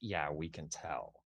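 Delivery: super snarky, slow drawling put-down tone. Voicing a shop clerk answering a customer: super snarky clerk voice. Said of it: "one of 'em super snarky and is like".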